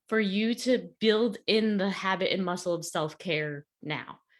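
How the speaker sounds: ordinary talk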